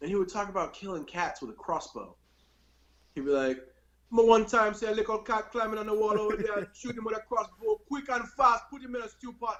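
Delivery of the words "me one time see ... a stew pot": put-on broad, thick Jamaican accent, pitched up. Quoting a part-Chinese man they knew, imitating his super thick accent. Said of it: "super thick accent".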